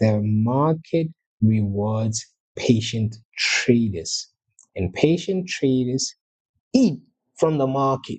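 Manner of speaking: very slow, deliberate, drawn-out delivery. A trading teacher tells viewers a key market lesson, saying it very slowly. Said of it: "I'm going to say it very slowly".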